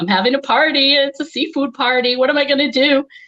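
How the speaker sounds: put-on upset sobbing. Speaker retells a filmed McDonald's prank asking for a McLobster: acting out fake upset crying. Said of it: "I got upset and I started crying".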